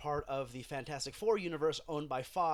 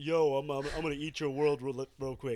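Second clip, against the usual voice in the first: bad put-on tough-guy voice, louder; 4 dB louder than usual. Joking about a casting choice: bad Sylvester Stallone impression. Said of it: "the shitty Stallone impression I just did".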